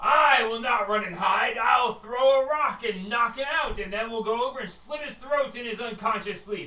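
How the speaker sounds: high, loud, defiant shout.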